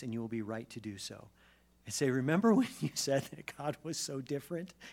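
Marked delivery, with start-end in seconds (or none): 2.1-4.7 high, fast, mocking, laughing, taunting tone. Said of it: "you can laugh in my face".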